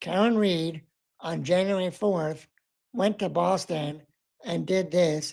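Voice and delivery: flat, terrible, droning monotone, like reading a script. Quoting how the prosecutor spoke, flat monotone. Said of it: "It just came out in a terrible monotone".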